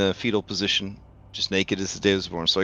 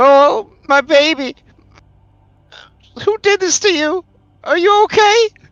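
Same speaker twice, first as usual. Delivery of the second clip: very high, very loud, pleading sobbing cry; 9 dB louder than usual. Retelling a story, voicing Grandma as she speaks to her son, imitating Grandma weeping. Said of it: "Grandma starts to weep".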